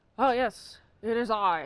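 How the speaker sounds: slow put-on British voice with Scottish undertone. Describing how the actor talked as a spy: Sean Connery as James Bond impression. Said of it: "he speaks James Bondly".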